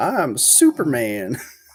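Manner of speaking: put-on yell. Retelling a childhood sled crash while flying through the air: imitating yelling. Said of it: "I yelled".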